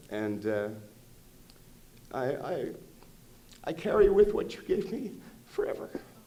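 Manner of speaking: moved, getting a little emotional. Addressing the director who taught the speaker about acting, getting a little emotional. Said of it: "I'm getting a little emotional here".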